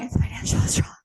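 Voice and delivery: breathless huffing wheeze, barely voiced. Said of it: "If I'm, like, huffing and puffing".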